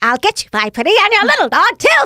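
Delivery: very high, shrill, swooping evil witch voice. Asked by an interviewer to show voiceover tones, evil witch voice. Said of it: "one of my favorite is the evil witch".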